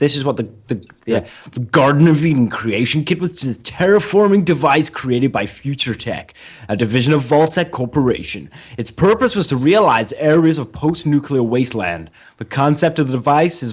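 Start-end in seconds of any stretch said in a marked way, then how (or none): 1.5-13.7 put-on American accent, read aloud. Reading a passage aloud, put-on american accent. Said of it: "I'll read it and I'll read it in an American accent".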